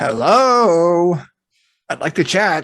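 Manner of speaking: walrus voice, words drawn out. Greeting a walrus in game, speaking in Walrus. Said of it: "Are you still speaking in Walrus?".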